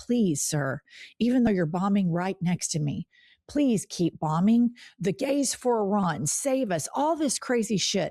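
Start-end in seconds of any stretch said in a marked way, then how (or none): 0.0-6.9 begging, imploring, desperate pleading voice. Retelling what was said at a press conference: imitating someone begging. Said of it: "were begging him".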